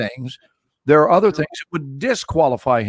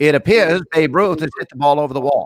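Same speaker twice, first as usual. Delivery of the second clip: 1940s New England hybrid announcer voice. Showing how the radio sounded in the forties: New England hybrid voice. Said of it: "a kind of a New England hybrid voice".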